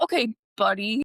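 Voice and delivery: passive-aggressive delivery. Showing how to call people buddy, say it in a passive-aggressive way. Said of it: "calling people buddy in a really passive aggressive way".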